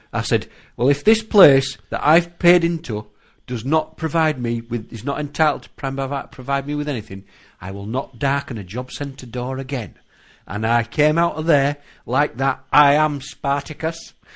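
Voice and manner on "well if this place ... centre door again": normal talking voice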